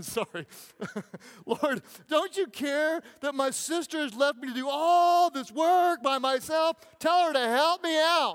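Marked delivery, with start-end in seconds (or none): 1.4-8.3 put-on distressed damsel voice. Retelling Martha's complaint to the Lord, in a mock-distressed Martha voice. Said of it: "woman in distress voice".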